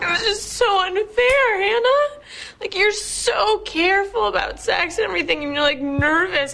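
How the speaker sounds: very high voice, sobbing and tearful through the words. Answering the other speaker right after she reveals she has HPV, crying. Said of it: "Are you crying?".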